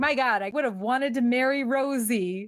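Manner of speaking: mock weepy, tearful, crumbling, breaking-down voice. Retelling a movie scene where Sam breaks down: imitating Sam breaking down. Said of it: "he's finally just breaking down".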